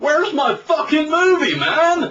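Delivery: very loud, very high, shrill Floridian voice. Quoting Liz when the movie finished, Liz's loud Floridian voice. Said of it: "in a very loud, very Floridian voice".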